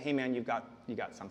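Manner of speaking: very hushed, low, quiet murmur. Acting out a friend who leans in to speak to the speaker, in a low voice. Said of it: "low voice".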